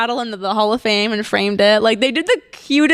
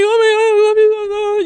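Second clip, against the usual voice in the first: acted very high, tearful blubbering sob; 11 semitones higher, 3 dB louder than usual. Retelling a thank-you call from the CEO: imitating own blubbering crying. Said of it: "I was just blubbering on the phone".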